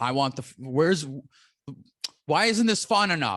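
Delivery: acted, rising, mild half-screamed yelled outburst. Retelling how the lady in the corner started screaming again: imitating someone screaming. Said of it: "she just immediately starts screaming again".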